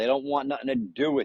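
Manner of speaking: ordinary talk, nothing marked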